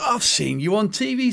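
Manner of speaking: put-on high, slow, drawn-out Welsh accent. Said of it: "said [name] in his Welsh accent".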